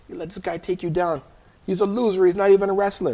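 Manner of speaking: high-pitched screaming. Retelling an older guy screaming from the corner: imitating someone screaming. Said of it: "this guy's screaming".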